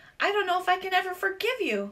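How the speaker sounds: high, squeaky, piping little voice. Humphrey, in his cage, answers ms. mack as she says goodbye: squeaking. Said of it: "I squeaked".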